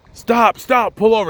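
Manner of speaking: mock insistent, commanding, high demanding yell. Retelling a driver honking at another car: imitating a demanding shout. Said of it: "He's demanding that he's pull over".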